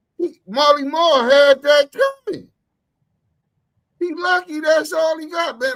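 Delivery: high, loud, heated outburst.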